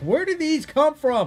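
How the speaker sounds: mock yelling. Telling a story about transferring photos, reenacting yelling at a cell phone. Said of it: "basically yelling at my cell phone".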